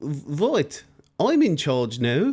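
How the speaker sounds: put-on loud, very slow, heavy French accent. Telling history, the speaker voices William the Conqueror arriving from France; French accent. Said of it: "That's meant to be a French accent".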